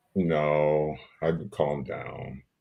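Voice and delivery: sounding sad. Answering whether they have been out running the streets, sounding sad. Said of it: "You sound so sad about it".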